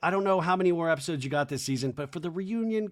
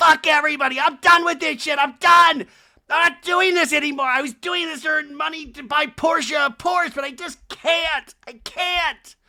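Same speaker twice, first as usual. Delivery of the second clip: very high, loud, shrill hysterical ranting; 9 semitones higher, 9 dB louder than usual. Retelling a reality-show fight, imitating Kyle hysterical. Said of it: "Kyle's still hysterical going".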